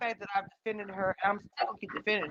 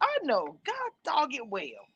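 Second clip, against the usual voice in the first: scolding mom voice, higher and quieter; 7 semitones higher, 4 dB quieter than usual. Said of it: "my auntie voice or my mama voice".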